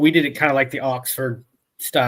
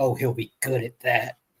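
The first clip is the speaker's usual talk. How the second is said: put-on mutter under breath, quieter; 6 dB quieter than usual. Retelling what the band director said passing in the hallway: imitating a mutter under breath. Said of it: "I hear under his breath say".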